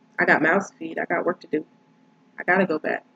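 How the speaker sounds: ordinary talk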